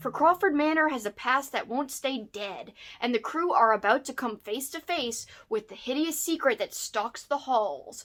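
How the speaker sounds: ordinary talk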